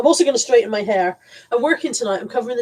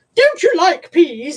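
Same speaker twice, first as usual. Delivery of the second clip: high, slow Victorian voice; 8 semitones higher, 5 dB louder than usual. Retelling a grandmother's question at the dinner table: imitating a victorian voice. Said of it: "in a very kind of Victorian voice".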